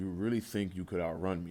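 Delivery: deep, lurking demon voice. Reading a comic aloud, voicing the demon: demonic voice. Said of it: "all you hear is a demonic voice saying".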